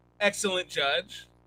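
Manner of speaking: loud, ironic, tongue-in-cheek sarcastic praise. Naming a fight's referee, calling him an excellent judge: sarcastic. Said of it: "I'm just being sarcastic there".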